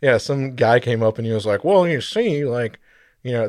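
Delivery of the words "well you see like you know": super nerdy, know-it-all scientist voice. Mocking a guy who came up to talk, nerdy lab coat scientist voice. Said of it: "that's my lab coat scientist, like, voice, like, super nerdy".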